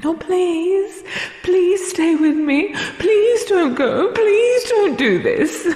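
frantic, desperate, very high-pitched pleading voice. Taunting the listener who begged, in a mocking imitation of begging. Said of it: "you begged me".

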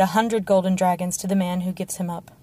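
ordinary delivery

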